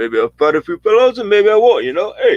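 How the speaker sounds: very high, sing-song, swooping animated cartoon bear voice. Joking about Rocky Balboa with a co-speaker, talking in a Yogi Bear-like voice. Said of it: "How come we sound like Yogi Bear?".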